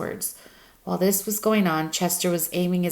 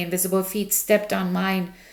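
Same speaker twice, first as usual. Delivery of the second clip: ordinary delivery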